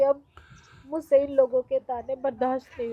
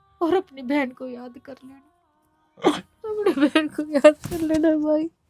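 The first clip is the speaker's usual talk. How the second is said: loud, crying, sobbing through the words; 4 semitones higher, 5 dB louder than usual. A sister gives her brother a thread of love, crying while talking. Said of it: "रो मत".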